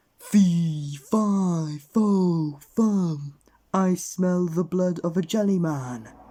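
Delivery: enormous, loud, booming giant voice, "fi" stretched. Reading a story aloud, a character pretends to be a giant; booming giant voice. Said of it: "an enormous voice boomed out".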